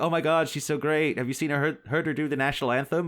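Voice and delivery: American accent impression.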